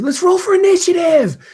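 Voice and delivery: shrill, very high, loud scream. Retelling a televised Dungeons and Dragons game where a player screams; retelling a scream. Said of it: "Ariel screams out".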